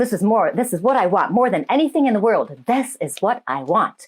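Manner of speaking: ordinary talk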